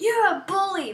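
mock high-pitched, shrieked, accusing scream. Recounting how she came back and screamed at you, retelling her screaming. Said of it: "she came back screaming at me like".

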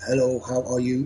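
machine-like, automated electronic voice. Describing a service that read text messages aloud: automated electronic voice. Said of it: "you'd hear this automated voice".

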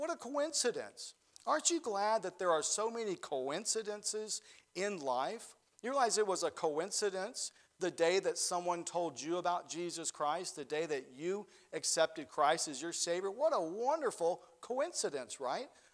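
ordinary talk, nothing marked

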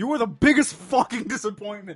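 mock furious yelling, very loud and shrill. Retelling a game scene, the speaker voices the king going off on Goofy, mock-angry shouting rant. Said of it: "Just goes off on him".

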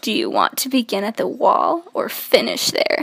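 guttural, throaty voice. Reading a book aloud to others, a character's line: guttural voice. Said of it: "His words were guttural".

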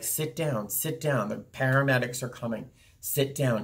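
ordinary talk

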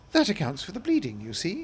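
with a smile. The Queen speaks to Alice after pricking her finger, with a smile. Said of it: "she said to Alice with a smile".

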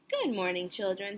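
ordinary delivery

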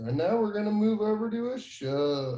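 strip-club MC announcer voice. Handing over to the next presenter, Ashok, on a call: stripper announcer voice. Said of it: "It sounded a little bit like a stripper announcer".

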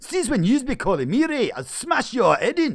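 very loud, very high, bad put-on Scottish accent. Asked by the other speaker to do one, putting on a Scottish accent. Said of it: "do a Scottish accent".

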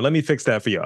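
put-on cocky sass with attitude. Saying how he would pitch a remake: put-on sassy attitude, with stank. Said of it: "I'm saying it with stank on it".

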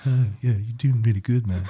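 put-on hippie accent. Speaker demonstrates the voice they give the snake in their show: hippie accent. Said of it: "I give him, like, a hippie accent".

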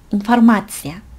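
ma in informatia stressed clearly, rest blurred. Pronunciation lesson on informatia: clear ma, rest of informatia blurred. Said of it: "앞에 거 그냥 대충 발음하다 이 마에서 찍고 대충".

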